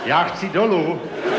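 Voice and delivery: loud, high-pitched yelling.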